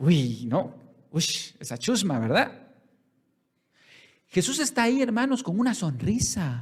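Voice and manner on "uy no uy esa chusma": acted-out scornful, sour, contemptuous, disdainful tone. Imitating a churchgoer looking down on unbelievers at a party: imitating contempt. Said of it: "así como con desprecio".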